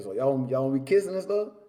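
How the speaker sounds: ordinary talk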